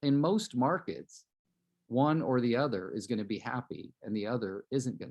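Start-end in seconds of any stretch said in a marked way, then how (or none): none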